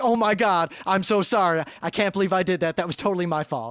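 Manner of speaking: frantic, profusely contrite, crazily over-sorry tone. Retelling a car crash, the other driver's apology: imitating someone crazily apologetic. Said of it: "she comes out crazily apologetic".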